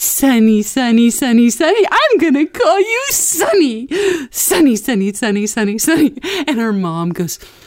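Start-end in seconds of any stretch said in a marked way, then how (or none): 0.0-6.2 gleeful, pitched-up, playful, needling teasing tone. Retelling how a cousin repeated a name to her mother, imitating a cousin teasing. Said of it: "having the time of her life teasing her mom".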